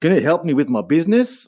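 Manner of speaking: attempted Australian accent. Retelling what a man asked when he sat up, in an Australian accent. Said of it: "I'm going to try this Australian accent".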